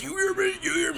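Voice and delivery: driest, raspiest street voice, very high. Retelling a story, showing how a random street dude sounded, straight crackhead voice. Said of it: "straight crackhead voice, like the most driest voice".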